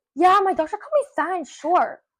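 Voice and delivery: mock cheerful enthusiasm. Retelling what a girl said about her doctor: imitating an enthusiastic tone. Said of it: "with enthusiasm".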